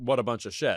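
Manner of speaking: ordinary talk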